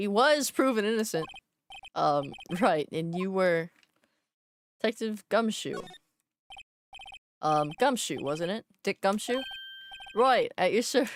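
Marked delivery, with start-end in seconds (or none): 10.2-11.1 bad put-on Australian accent. Voicing Detective Gumshoe answering about his name, bad Australian accent as Gumshoe. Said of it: "That was that's Australia. I have such a bad accent".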